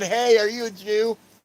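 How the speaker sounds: put-on yelling. Retelling a misheard call from across the yard: imitating someone yelling. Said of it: "I straight thought you yelled and said".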